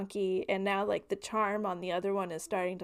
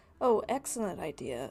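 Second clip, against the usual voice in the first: usual speaking voice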